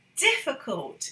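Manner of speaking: 'difficult' emphasized. Demonstrating sentence stress to viewers, stress on 'difficult'. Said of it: "we need to hear the stress".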